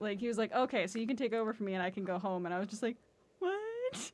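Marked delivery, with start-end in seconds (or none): 0.5-2.5 mock bone-dry, flat, matter-of-fact delivery. Recalling a colleague's dry humor from when they started working there: imitating his deadpan delivery. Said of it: "he would like deadpan say things to me".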